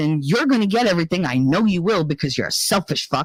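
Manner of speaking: play-acted, furious, lost-temper tirade. Retelling telling off an uncle in the car: reenacting own furious outburst. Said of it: "That's me losing my temper".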